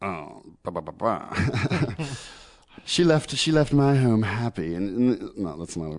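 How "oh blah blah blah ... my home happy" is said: slow, put-on English accent. Speaker retells what a woman said when asked, put-on English accent. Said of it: "I'm doing an English accent".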